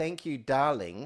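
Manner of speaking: pointed, dry, sarcastic tone. Retelling thanking a woman serving coffee: retelling own sarcastic thanks. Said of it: "she could probably pick up the sarcasm in my".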